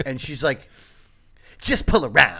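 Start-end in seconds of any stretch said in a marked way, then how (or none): 1.6-2.4 curt, rude, snippy raised voice full of attitude. Retelling a McDonald's worker telling the driver to pull around, mock rude attitude. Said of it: "said it with such an attitude".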